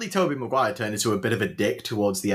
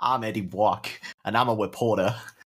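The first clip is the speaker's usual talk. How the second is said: fake Brooklyn accent, badly done. Recalling how Tom Hardy opens the first trailer, do a bad Tom Hardy Brooklyn accent. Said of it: "one of the worst like Brooklyn accents".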